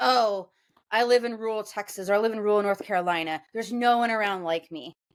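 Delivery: ordinary delivery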